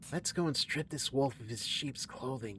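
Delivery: soft whisper, very quiet, barely voiced. Makoto speaks so softly the other character asks why, whispering. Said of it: "why are you whispering?".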